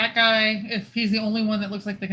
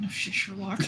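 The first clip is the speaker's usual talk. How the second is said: muttered, much quieter; 7 dB quieter than usual. A game narrator voices a woman answering a request to help, muttered. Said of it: "She just mutters like".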